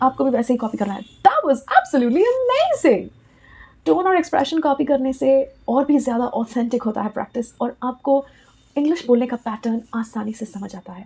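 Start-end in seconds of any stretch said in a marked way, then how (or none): 1.0-3.1 very high, swooping, animated thrilled delivery. Teaching english practice lines, demonstrating a dialogue delivered with excited delivery. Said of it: "अगर excitement से किसी ने dialogue deliver किया".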